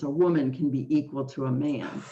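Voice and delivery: normal talking voice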